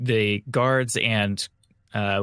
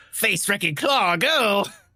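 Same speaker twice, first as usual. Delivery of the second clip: very high, anime-style shouted cry; 11 semitones higher than usual. A player mocks others for calling out attacks like anime characters; mock anime attack-name shout. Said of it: "shouting their attack names like anime characters".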